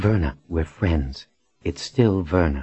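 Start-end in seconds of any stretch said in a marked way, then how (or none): none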